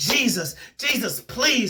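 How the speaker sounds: play-acted, desperate, begging plea, called out. Retelling a prayer from a dream, retelling own begging prayer. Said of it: "And I'm begging out to him".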